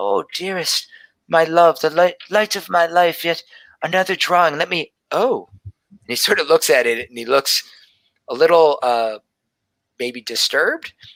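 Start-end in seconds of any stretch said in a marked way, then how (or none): 0.0-5.5 adoring, tender, doting fatherly voice. Voicing a father receiving a drawing: doting father. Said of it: "He says".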